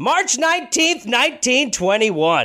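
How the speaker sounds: loud, yelled-out words. Announcing a date to the other speaker as part of a joke: yelling the date. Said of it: "have a date yelled at you".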